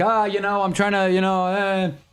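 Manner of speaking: acted, frazzled, panicky, flustered fumbling babble. Retelling a game scene where everyone panics: imitating panicking characters. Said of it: "they're all kinda, like, panicking".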